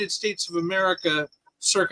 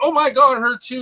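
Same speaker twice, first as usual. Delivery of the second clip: put-on high, loud, excited exclamation in American accent; 6 semitones higher, 6 dB louder than usual. Contrasting British deadpan humor with how an American would say it, mock excited American reaction. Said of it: "like an American".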